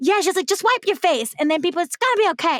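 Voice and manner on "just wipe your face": put-on heavy, thick Brooklyn New Yorker accent. Retelling what a New Yorker told her on the subway, thick Brooklyn accent. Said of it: "she had like this thick Brooklyn accent".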